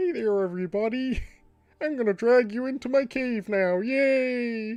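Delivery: yay pitched squeaky-high and dragged out long. Imagining how the head would sound, the speaker does a bad Kermit the Frog impression. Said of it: "the worst sounding Kermit you've ever heard".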